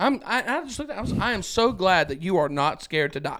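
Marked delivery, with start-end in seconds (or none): none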